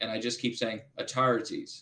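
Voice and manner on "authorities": put-on Irish accent. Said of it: "to do an Irish accent".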